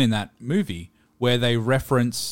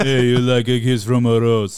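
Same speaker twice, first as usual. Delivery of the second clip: loud, belted put-on action movie star voice; 5 dB louder than usual. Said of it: "get [name] instead of [name]".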